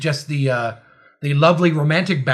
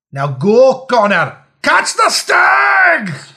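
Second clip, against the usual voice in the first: put-on Scottish accent, higher and louder; 10 semitones higher, 7 dB louder than usual. Riffing on a movie scene with another speaker: Scottish accent like Mike Myers. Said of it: "I can only do a Scottish accent as, as Mike Myers".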